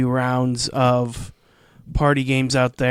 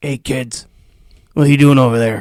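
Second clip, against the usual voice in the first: loud, weird, creepy stranger voice; 8 dB louder than usual. Playing the creepy riverboat guy who hands the kids a quest, creepy riverboat guy voice. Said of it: "that weird, creepy guy in the riverboat".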